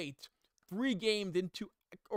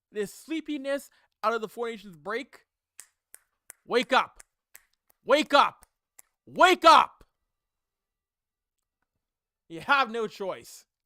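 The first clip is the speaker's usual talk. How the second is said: very loud, deliberate, fiery, fired-up tone; 3 semitones higher, 10 dB louder than usual. Telling the team they must step up and wake up, fired up. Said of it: "I'm a little fiery right now".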